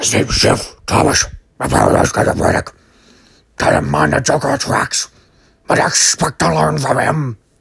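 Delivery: loud, rough superhero voice.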